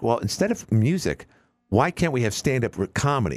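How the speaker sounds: ordinary delivery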